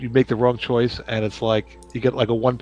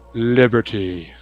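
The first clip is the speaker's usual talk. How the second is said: booming, commanding stentorian voice; 3 dB louder than usual. Speaking a password aloud in character: stentorian voice. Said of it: "In a stentorian voice".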